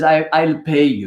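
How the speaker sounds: put-on heavy, laid-on Russian accent. Retelling what a man said on the phone, in a heavy russian accent. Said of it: "this man with a very heavy Russian accent".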